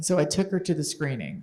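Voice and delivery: ordinary talk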